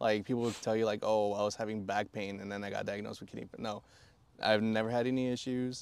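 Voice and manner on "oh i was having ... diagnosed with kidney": usual speaking voice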